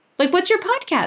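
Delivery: sudden impressed excitement.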